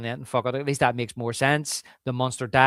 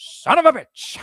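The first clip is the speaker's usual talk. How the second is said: loud, shrill, stretched out; 13 semitones higher, 6 dB louder than usual. Retelling a movie scene with a bad Roy Scheider impression. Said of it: "a really bad Roy Scheider impression".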